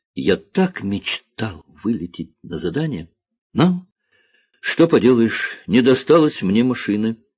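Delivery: plain reading voice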